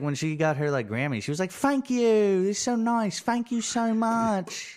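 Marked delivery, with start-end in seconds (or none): 1.5-4.8 put-on very British accent, high pitched and slow. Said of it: "She's very British".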